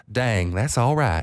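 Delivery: put-on Texas accent of an older man. Quoting a janitor's reply on hearing about the raised money: older Texan man's accent. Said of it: "I'll say this in the accent 'cause he is an older man from Texas".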